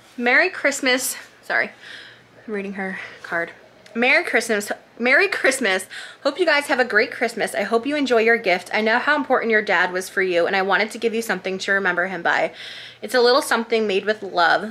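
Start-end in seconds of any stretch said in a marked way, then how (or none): none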